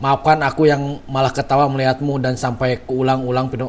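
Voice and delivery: normal talking voice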